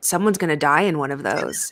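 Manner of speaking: put-on deadpan delivery. Retelling the mother's reaction to Oprah's car giveaway: imitating mom's deadpan delivery. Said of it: "she does it in such a deadpan way".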